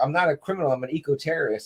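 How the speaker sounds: ordinary delivery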